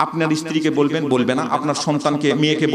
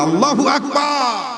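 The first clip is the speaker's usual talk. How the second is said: high, slow, drawn-out call, like across a crowd. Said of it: "চিৎকার করে বলেন".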